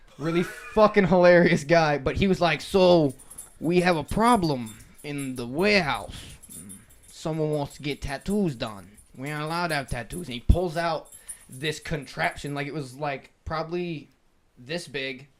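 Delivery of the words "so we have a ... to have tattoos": put-on New York accent. Retelling a house meeting run by the program head: imitating Lieutenant J. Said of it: "he talked like this".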